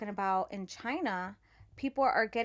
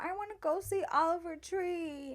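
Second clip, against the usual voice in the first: put-on crying child voice, higher; 8 semitones higher, 3 dB quieter than usual. Retelling a TikTok video of a little girl telling her mom: imitating a crying girl. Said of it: "And she's crying".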